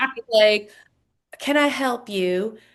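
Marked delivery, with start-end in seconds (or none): 1.4-2.5 polite, genteel, slow Southern gentleman drawl. Retelling what a man in a mansion hallway said, in a proper southern gentleman accent. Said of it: "so like Southern gentleman proper".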